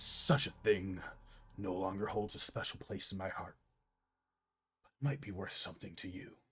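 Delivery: whispering in a character voice. Game master voicing the Apathian speaking to the players, Apathian whispering. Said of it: "the Apathian whispers to you".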